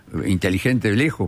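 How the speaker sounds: normal talking voice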